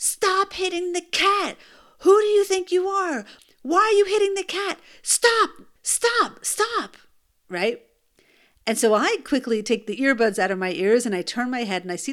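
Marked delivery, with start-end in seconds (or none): 0.0-7.0 acted, loud, very high screeching scream. Retelling how a man screamed at her boys about the cat: imitating a man screaming. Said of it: "this guy is screaming".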